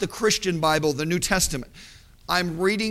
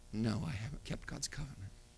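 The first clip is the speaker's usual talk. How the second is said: very soft, very low, hushed voice; 8 semitones lower, 18 dB quieter than usual. Retelling how a woman finally answered his questions, in a quiet voice. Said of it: "she said with a quiet voice".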